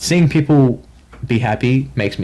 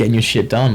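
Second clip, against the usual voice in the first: normal talking voice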